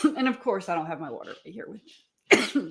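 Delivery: choking, strained throat speech. Talking on a live while choking up: coughing while talking. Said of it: "getting all choked up here".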